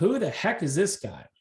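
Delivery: ordinary delivery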